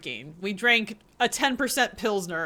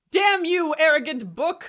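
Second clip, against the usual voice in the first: high, angry, exasperated yelled shout; 8 semitones higher, 3 dB louder than usual. Shouting at a talking book after failing its test: shouting at a book. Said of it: "You are shouting at an inanimate object".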